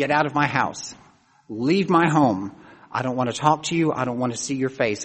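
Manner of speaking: ordinary delivery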